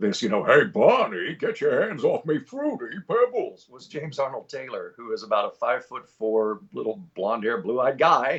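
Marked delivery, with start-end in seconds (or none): 0.4-3.7 big, oafish, swooping cartoon voice with energy. Describing how a cartoon was voiced: Fred Flintstone voice. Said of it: "the voice of Fred Flintstone".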